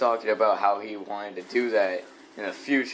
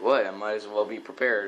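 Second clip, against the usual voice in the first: normal talking voice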